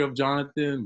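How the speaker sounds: voice breaking a little, nervous. Retelling introducing oneself to someone: imitating own cracking voice. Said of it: "Voice is cracking a little bit".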